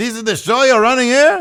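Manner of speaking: pitched way up and loud, missing the note. Retelling a backstage wrestling segment: failed Maurice impression. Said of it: "that was not Maurice".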